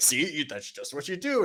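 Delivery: dim-witted sounding voice. Describing a guitarist who teaches people to play, the speaker mimics his really dumb voice. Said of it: "talks in this really dumb voice like this".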